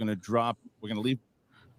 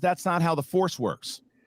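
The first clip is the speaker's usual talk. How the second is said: ordinary talk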